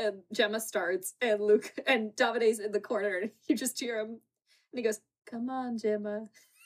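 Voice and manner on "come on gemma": mock deadpan, flat and level monotone. Retelling how someone in the corner cheered gemma on: monotone cheering. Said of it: "Just so monotone cheering her on".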